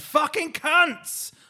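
mock yelled outburst, very high and loud. Retelling what someone shouted as he stormed off, retelling a shout. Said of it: "I just realised how loud I said that".

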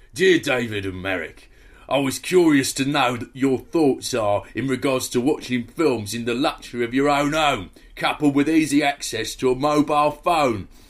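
read aloud in an Essex accent. Reading out a listener's letter, as the writer asked: Essex accent like Ray Winstone. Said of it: "please read my letter out in an Essex accent".

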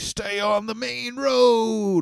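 put-on ominous old man voice shouting, very high, drawn-out. Recapping a horror movie, acting out the gas station owner yelling at the family, retelling an old man's yell. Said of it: "he's like yelling at them".

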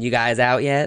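put-on playful, teasing tone. Retelling how a friend used to tease the group: imitating a friend's playful teasing. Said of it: "playfully come up to us and be like".

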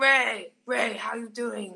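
put-on French-accented voice. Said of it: "I'm really good at doing his impression now".

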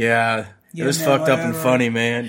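heavy, deep, sunken register, unpushed. Showing how he used to sound on podcasts: imitating own deeper voice. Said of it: "my register of voice was much deeper".

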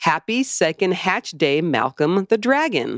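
normal talking voice

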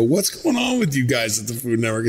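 mock words breaking into laughter, swooping pitch. Retelling the end of the intro: retelling himself laughing while talking. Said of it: "And then I start to laugh and I go".

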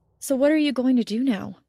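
ordinary delivery

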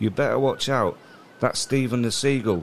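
ordinary talk

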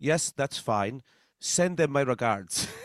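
put-on Dutch accent. Recounting Max Verstappen's reply to a penalty: Max Verstappen Dutch accent. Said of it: "I'll try to do my best Dutch accent".

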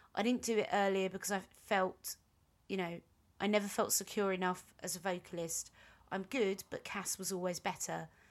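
ordinary delivery

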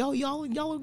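hushed scolding. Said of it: "I handle it like that".

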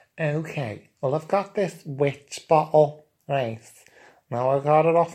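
put-on camp Liverpool Scouse accent. Asked to show what he's got, presenting a witch bottle, camp liverpool accent. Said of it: "in his camp Liverpool accent".

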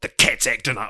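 put-on yelling. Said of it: "yells at Andy and is like".

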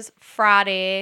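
put-on country twang. Teasing a friend by copying how she says friday: imitating a country twang. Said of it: "you get this little country twang".

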